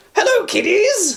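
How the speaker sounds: very high-pitched, leering ghoulish host voice. Discussing an actor's credits, one speaker does a Crypt Keeper voice. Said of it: "He's the Crypt Keeper".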